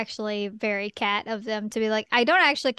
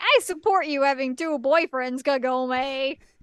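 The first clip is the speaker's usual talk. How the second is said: put-on American Midwest accent; 3 semitones higher than usual. Recapping a scene, voicing one girl's line in a Midwestern accent. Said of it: "I gave her a Midwestern accent".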